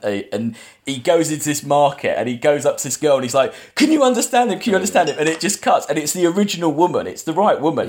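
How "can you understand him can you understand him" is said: put-on, very high, frantic, rushed, pleading panic. Retelling a film scene where a character asks a girl in a market, imitating Tim freaking out. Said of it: "Tim's freaking out".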